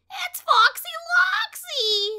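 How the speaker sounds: piercing shriek, very high and very loud. Chicken Little recognizes the fox from a wanted poster; shrieking. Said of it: "She shrieked".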